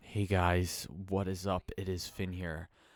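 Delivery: glum, lifeless, low, depressed delivery. Recalling early YouTube videos, the speaker imitates own past depressed voice. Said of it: "I sounded so depressed".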